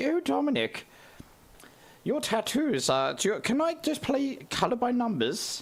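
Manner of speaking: high-pitched swooping posh tone. Showing how your late nan used to sound, imitate her sounding like the Queen of England. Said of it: "I just imitate how my nan used to sound".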